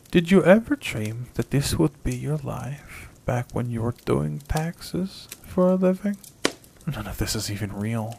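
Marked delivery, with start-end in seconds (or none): 6.9-8.2 quiet mutter under the breath. A woman speaks to herself after touching the boy, under her breath. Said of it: "Cat said under her breath".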